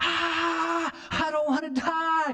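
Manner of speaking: very high-pitched shriek, "ah" stretched long. Retelling being pushed out of a plane while skydiving: reenacting own scream. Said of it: "I'm screaming like".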